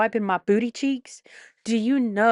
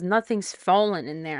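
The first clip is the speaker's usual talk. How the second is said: ordinary delivery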